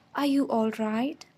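tender, affectionate. He asks the narrator after their shaky laugh, tender. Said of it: "He asked tenderly".

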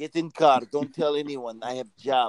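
put-on Russian accent. Playing Yuri, speaking to Dylan, in a mock Russian accent. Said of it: "I'm from the motherland Russia".

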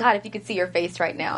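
plain

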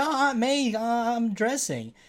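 high, very slow, halting voice with every word stretched. Retelling a movie scene, answering Aunt May at the door: imitating Tobey Maguire's Spider-Man. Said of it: "Tobey Maguire's Spider-Man ... he's like".

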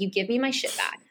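put-on very serious menacing tone. Retelling a scene where he threatens her to get his things back, imitating a very serious threat. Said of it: "He's very serious".

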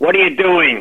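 put-on gruff voice. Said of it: "in that gruff voice".

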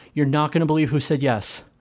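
ordinary talk

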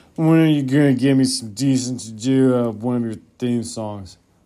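put-on drunk voice. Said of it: "That was me pretending to be a drunken [name]".

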